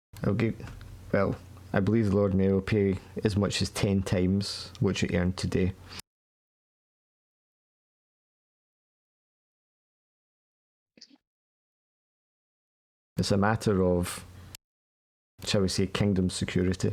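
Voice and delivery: quiet, hushed voice. Game master voicing a man who leans down to talk amid a noisy crowd, trying to be quiet. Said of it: "he's trying to be quiet".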